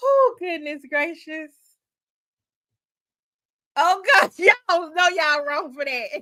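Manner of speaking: words broken up by laughter. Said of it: "If I can stop laughing".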